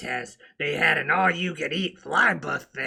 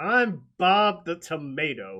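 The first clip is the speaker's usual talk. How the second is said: ordinary talk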